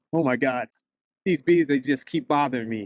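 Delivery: plain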